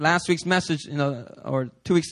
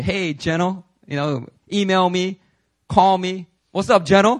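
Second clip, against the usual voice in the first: mocking, sarcastic, teasing tone; 2 semitones higher, 5 dB louder than usual. Retelling how Bobby used to tease the speaker, imitating Bobby mocking. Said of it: "when Bobby would mock me and say".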